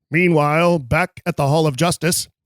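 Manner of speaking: old-fashioned cartoon narrator voice. A speaker tries the voice the kids named: Super Friends narrator voice. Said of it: "My kids call it my Super Friends narrator voice".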